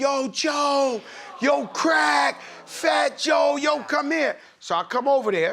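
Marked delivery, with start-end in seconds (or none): 0.0-4.4 acted, very slow, high, drawn-out shout. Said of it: "Biggie starts screaming over the thousand people".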